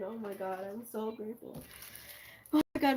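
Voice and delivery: moved, heartfelt, touched, gushing tone. Thanking someone for a surprise gift: emotional, touched. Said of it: "I feel so emotional now".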